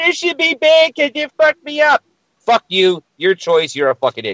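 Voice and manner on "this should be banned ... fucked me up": sobbing, whiny crying voice, very high-pitched. Mocking someone who can't handle edibles: mock crying complaint. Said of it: "sits in the corner crying, saying".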